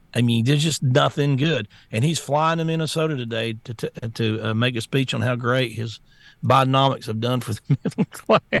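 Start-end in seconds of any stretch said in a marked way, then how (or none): 6.4-8.6 scoffing laugh breaking through the words. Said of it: "I can't even say it without laughing".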